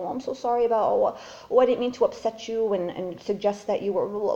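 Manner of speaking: small, meek, timid, groveling voice. Acting out the mind as an abusive boyfriend and you apologizing: meek apologetic voice. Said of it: "you're like the meek little".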